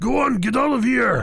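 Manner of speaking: shrill, very high, loud put-on yell. In a tabletop game, yelling to another character in a fake voice. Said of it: "Still using this fake voice".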